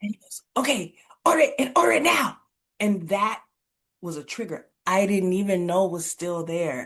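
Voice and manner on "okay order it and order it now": very high-pitched, loud, harsh, frantic, urgent demanding tone. Retelling how a partner called from coaching, asking for an order: imitating a harsh, frantic order. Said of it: "his tone was like".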